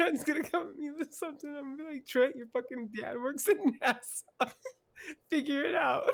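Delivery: very high-pitched speech through tears of laughter. A guest jokes about how he'll answer a friend, crying with laughter. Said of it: "He's literally crying".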